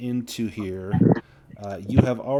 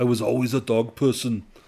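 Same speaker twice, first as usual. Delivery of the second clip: louder, put-on Austrian-accented action-hero voice. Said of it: "like, an Arnold Schwarzenegger voice".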